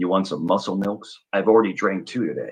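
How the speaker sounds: low, deep, heavy voice. Retelling how the son offered drinks from the car: imitating son's low voice. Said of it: "he has a low voice, right?".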